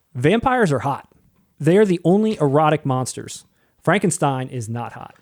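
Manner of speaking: ordinary talk, nothing marked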